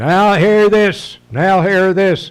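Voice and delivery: shrill, blaring, booming, high bullhorn announcer voice. Describing life on board ship, imitating the big bullhorn voice that announces. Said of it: "this big bullhorn voice comes over the".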